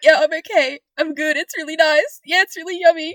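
put-on, very loud and high, swallowing back vomit. Retelling a girl eating spaghetti answering her mom, imitating holding back vomit. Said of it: "swallowing back vomit".

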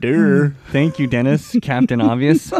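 loud, put-on sarcastic tone. Acting out a joke reply to a co-host: put-on sarcastic tone. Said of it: "I wanted to be, like, sarcastic".

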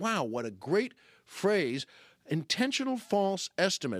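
plain

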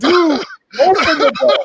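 put-on laughing yell, very high and loud. Telling others about a scene they watched, re-enacting own screaming at it. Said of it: "I was screaming at the thing".

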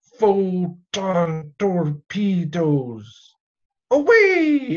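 strange, high-pitched calling out. Recapping an episode, quoting a crew member's announcement; Chekhov's weird voice. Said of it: "in that weird voice".

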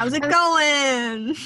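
put-on New York accent, drawn-out "going". Joking about someone visiting her parents in Florida; put-on New York accent. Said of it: "I'm sorry to any Italian Americans listening".

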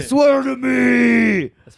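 high, loud, slow shout. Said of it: "That's my police voice".

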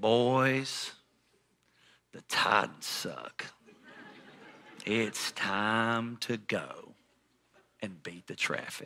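drawn-out slow talking. Retelling what stepbrother's dad said at the game: imitating someone talking very slowly. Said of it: "he talks real, real slow".

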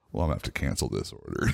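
bored, routine clerk-like tone.

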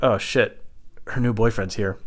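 ordinary talk

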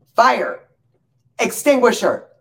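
very high, very loud, shrill, firm voice. Retelling what Jay called out during an oven fire: imitating Jay declaring loudly. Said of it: "she very declaratively and loudly says".

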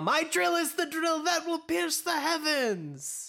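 high, slow, yelled anime battle cry. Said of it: "as we yell".

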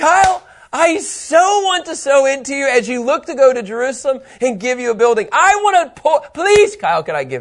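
eager, high, loud begging. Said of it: "somebody came up to me and like".

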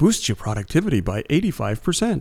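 commercial announcer voiceover style. Showing a friend how they sound like a commercial, commercial announcer voice. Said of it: "a commercial".

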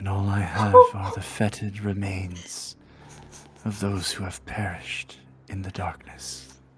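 mournful, despairing, gloomy, depressed creature voice. Playing a spider in a game with friends, in a depressed spider voice. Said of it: "You brought a depressed spider".

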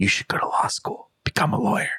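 soft, hushed whisper. Recapping a show, the speaker retells an evicted contestant's advice, imitating a whisper. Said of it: "she whispers like".

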